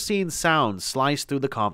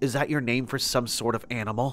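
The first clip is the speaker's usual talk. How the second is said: ordinary delivery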